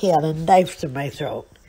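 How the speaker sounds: usual speaking voice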